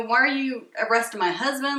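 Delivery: acted, frantic, panicked outburst, losing it. Retelling confronting police during an arrest: imitating freaking out. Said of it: "freaking out on them".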